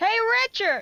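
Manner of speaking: loud, very high-pitched shout. Voicing a character calling a crewmate over: shouting. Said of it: "Boots shouts".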